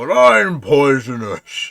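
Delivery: very loud, booming monster frog voice. Voicing a giant frog that missed its bite. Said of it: "you hear the frog say back".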